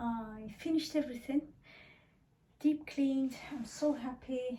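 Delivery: out of breath, winded. After their alarm went, speaker reports finishing the deep cleaning, out of breath. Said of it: "I'm out of breath".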